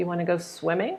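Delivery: voice lifting upward on swimming. Teaching yes-no questions, voice rising at the end on swimming. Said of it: "Voice goes up".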